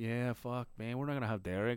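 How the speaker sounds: mocking, teasing tone. Speaker retells his own remark while making fun of her; retold mocking, making fun. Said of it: "I'm just making fun of her".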